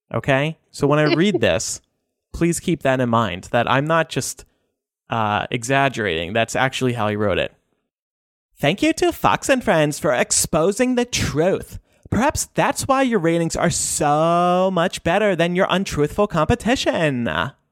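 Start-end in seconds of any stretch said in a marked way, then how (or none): 8.6-17.3 put-on high Valley Girl voice, very stretched out. Read one of Trump's tweets aloud to listeners, exactly as he wrote it, in a Valley Girl voice. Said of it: "read Trump's tweets in a Valley Girl voice".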